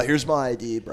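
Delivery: stock frat guy bro voice. Retelling bouncing downtown, imitating a patron handing over id: imitating a frat guy. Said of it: "all the frat guys talk the same".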